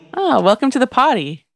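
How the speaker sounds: high, grinning tone. Richie answers Bobby from the back of his mind, grinning. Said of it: "Richie grinned".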